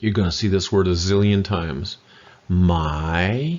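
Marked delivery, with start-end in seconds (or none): 2.5-3.6 my with its pitch sliding upward. Language lesson introducing a very common word: rising tone on my. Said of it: "rising tone".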